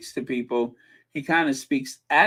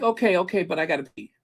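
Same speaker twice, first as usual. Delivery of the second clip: fast, hurried, impatient, rushed talk; 4 semitones higher than usual. Mocking someone's way of talking: imitating someone rushing to the bathroom. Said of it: "He's talking like he's trying to get to the bathroom".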